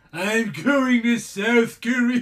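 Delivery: very loud, high-pitched, belted cat voice. Reading a story line aloud in Lloyd the cat voice. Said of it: "why do you sound like Lloyd".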